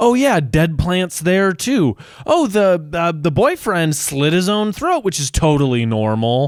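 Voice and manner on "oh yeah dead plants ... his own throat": put-on patronizing, lecturing, condescending know-it-all voice. Retelling an episode scene, quoting Dean laying into Sam: condescending Dean, "I told you so". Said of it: "a condescending, "I told you so" kind of way".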